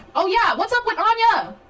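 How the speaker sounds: high, loud shouting. Speaking to an audience, the speaker raises a question, yelling. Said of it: "I know I'm yelling".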